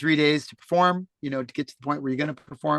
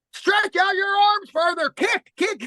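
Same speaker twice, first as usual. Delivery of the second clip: shrill, very high-pitched, coach-like yell. Retelling a swim coach's morning instructions: imitating a coach yelling. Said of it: "yelling at me every morning".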